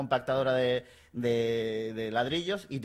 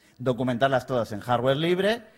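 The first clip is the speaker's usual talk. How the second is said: ordinary talk, nothing marked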